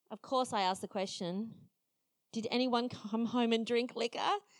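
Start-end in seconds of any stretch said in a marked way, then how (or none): none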